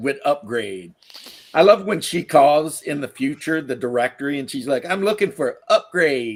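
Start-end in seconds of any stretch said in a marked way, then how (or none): 4.8-6.4 exaggerated, thorough street-style slang delivery.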